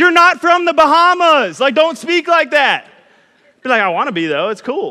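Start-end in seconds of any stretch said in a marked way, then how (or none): 0.0-2.9 scolding, loud, high-pitched yell. Retelling how someone scolded the speaker for talking that way, imitating someone yelling. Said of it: "Erica would yell at me".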